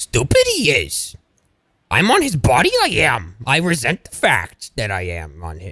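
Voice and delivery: put-on little alien voice. Retelling an earlier bit with a Yoda shirt: Yoda voice. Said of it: "And I was like".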